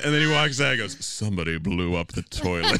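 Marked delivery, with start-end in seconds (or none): 1.0-2.8 deep, low voice. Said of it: "In that deep voice of his".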